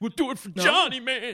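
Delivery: very high, put-on voice pushed way up. Naming the impression, then repeating the line: Matt Dillon impression. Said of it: "it's my Matt Dillon".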